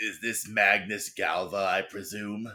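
put-on low-pitched old lady voice. Voicing the unseen speaker who greets Magnus Galva, in a Monsters, Inc. old lady voice. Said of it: "Is that the old lady from Monsters, Inc.?".

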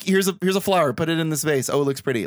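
ordinary talk

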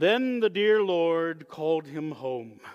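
put-on sanctimonious, very pious churchy tone. Retelling what he said holding up the rat, in a mock-pious voice. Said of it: "says in a very pious voice".

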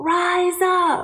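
put-on high, faraway yell. Speaker retells the pastor calling from her office, retelling a distant yell. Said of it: "is what she yelled at the phone".

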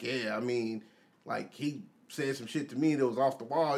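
ordinary delivery

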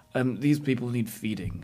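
ordinary delivery

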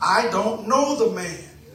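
"I don't know" emphasized.

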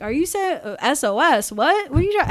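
loud delivery. Retelling asking a whispering man whether he meant SOS, retelling saying it loud. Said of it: "But I said it loud".

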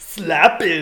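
loud, quick, put-on Jamaican accent. Quoting a movie line about slapping the bass: imitating a Jamaican accent. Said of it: "doing, like, a Jamaican accent".

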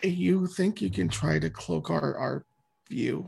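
hushed, quiet aside.

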